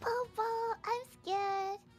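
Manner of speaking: put-on baby talk voice. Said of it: "frickin' baby talk again?".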